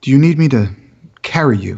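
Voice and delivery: grave, earnest, deeply sincere, dead serious. Voicing a character kneeling beside a wounded companion: very serious, sincere. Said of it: "very, very seriously, and it would even sound sincere".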